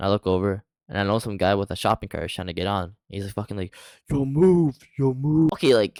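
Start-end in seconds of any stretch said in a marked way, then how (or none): 4.1-5.5 put-on, very slow, drawn-out angry yell, pitched up. Retelling a man with a shopping cart getting on the bus: imitating an angry yell. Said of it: "an angry yell".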